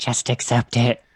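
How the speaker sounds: quiet whispered voice. Playing a character who whispers to a waiter: whispering in someone's ear. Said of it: "I whisper in his ear".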